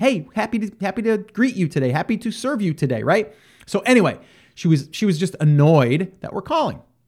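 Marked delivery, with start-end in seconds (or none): 0.0-3.0 put-on cheerful, upbeat customer-service voice. Showing how a coffee shop worker should greet customers: imitating an upbeat greeting.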